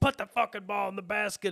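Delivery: shrill, very high, loud coach-style yell. Imitating a coach on the sidelines: imitating a yelling coach. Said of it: "whatever the fuck else they're yelling".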